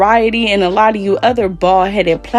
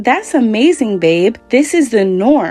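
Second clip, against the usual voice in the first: normal talking voice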